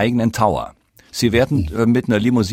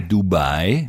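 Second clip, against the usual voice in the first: Dubai, stress on second syllable -bai; 4 semitones lower than usual. Talking about a flight route, stress on second syllable of Dubai. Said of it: "Achten Sie darauf, dass ich auf der zweiten Silbe betone".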